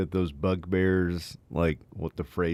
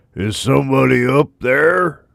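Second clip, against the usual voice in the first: booming, very loud, high monster voice; 7 semitones higher, 12 dB louder than usual. Voicing the bugbear a second time, same as before: bugbear voice. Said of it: "in the same bugbear voice".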